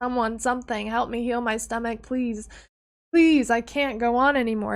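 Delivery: acted sobbing, tearful voice. Speaker reenacts their past self begging for help, reenacting a crying plea. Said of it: "I was like on my knees crying".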